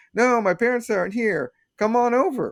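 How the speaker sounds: put-on very high cartoon kid voice. Retelling a cartoon scene, imitating Timmy. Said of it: "Timmy's like".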